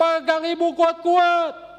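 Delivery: piercing, shrill, very loud, high-pitched yell. Retelling how a mother in a flash flood shouted to her child: imitating a shout. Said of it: "Dia berteriak".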